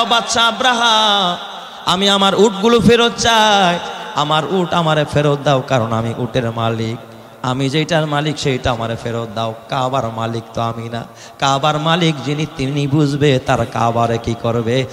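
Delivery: ordinary talk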